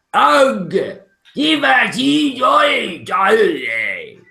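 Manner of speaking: very high, very slow, swooping, shrill, booming giant voice. Narrating a scene, voicing the voice from the cave: loud giant voice. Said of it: "You hear a loud voice".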